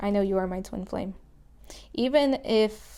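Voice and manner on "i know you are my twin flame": ordinary talk, nothing marked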